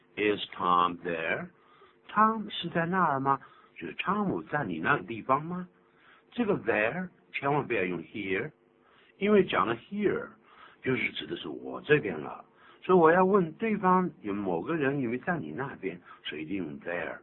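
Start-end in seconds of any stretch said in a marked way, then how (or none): 0.2-1.5 slow, stretched phrase with a rising end. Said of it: "要上扬".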